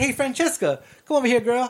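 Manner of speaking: creepy, sleazy, pervy flirting voice. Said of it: "he starts doing this impression of [name]".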